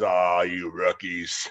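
put-on deep male voice. Retelling Jonathan's reply to the rookie speaker's question, imitating his deep voice. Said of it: "he had this deep bowl of a voice".

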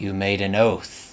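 spoken in a hiss. Narrator reads a character's line to a hesitating girl, hissing. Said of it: "he hisses".

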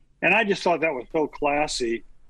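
ordinary talk, nothing marked

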